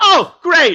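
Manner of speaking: shrill, booming, loud, high overjoyed cry. Retelling a player hearing he need not betray anyone: imitating an overjoyed reply. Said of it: "And he was overjoyed".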